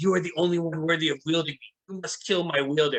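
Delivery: imperious, commanding, authoritative voice. Voicing a sword speaking in a player's head: voice of a crazy commanding sword. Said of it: "you hear this voice in your head".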